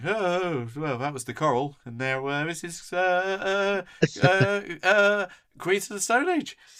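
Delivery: halting, high stammer with drawn-out "uh". Retelling own first student radio show links: imitating own past stuttering. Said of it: "stuttering and going".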